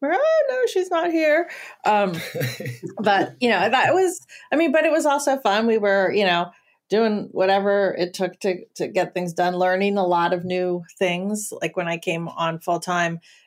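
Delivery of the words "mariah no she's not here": disguised voice, much higher, faster. Recalling answering calls from people owed money, retelling the reply: disguised voice. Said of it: "I got really good at disguising my voice".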